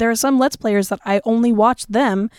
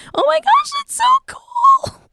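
very high, squeaky, gushing excitement; 3 dB louder than usual. Speaker describing how their voice changes when excited: retelling excited high squeaky voice. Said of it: "my voice gets all high and squeaky".

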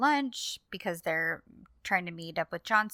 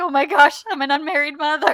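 very loud, high, tearful wailing cry, acted out; 8 semitones higher, 10 dB louder than usual. Retelling a character's reaction after being called an unmarried mother: imitating tearful crying.

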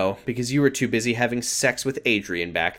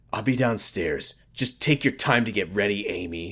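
hard, harsh tone; 3 semitones lower than usual. Reading a story, a man speaks to Amy as he walks away, harsh tone. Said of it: "he said in a harsh tone".

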